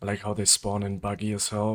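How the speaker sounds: ordinary talk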